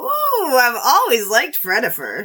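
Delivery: put-on sweet, sing-song old lady voice with plenty of sass. Retrying a character line after being told: higher-pitched sassy old lady voice. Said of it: "Higher, higher pitched".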